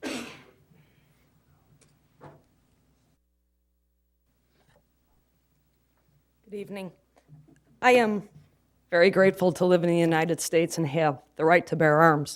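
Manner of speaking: nervous, jittery, trembling, shaky voice. A speaker called up by name, addressing the room in a nervous shaky voice. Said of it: "pardon my shaky voice".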